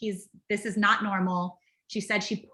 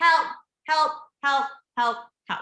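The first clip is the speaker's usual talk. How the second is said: raised high-pitched call; 5 semitones higher than usual. Demonstrating step three of checking on someone, yelling for help. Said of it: "you're gonna yell for help".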